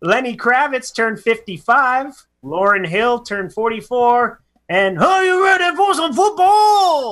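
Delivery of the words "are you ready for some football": badly done, very high-pitched delivery. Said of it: "That was terrible".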